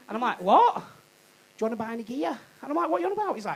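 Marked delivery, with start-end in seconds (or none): 0.8-2.4 bad Liverpool Scouse accent, quieter. Retelling a bloke met off the train at Liverpool Lime Street: bad Liverpool accent. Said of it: "I'm going to do a really shit accent".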